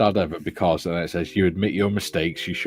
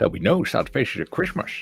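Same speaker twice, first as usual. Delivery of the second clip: pitched-up, rough, creaky, raspy voice; 5 semitones higher than usual. Answering a viewer about an earlier voice, redoing the line: Grinch voice. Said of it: "No, Grinch".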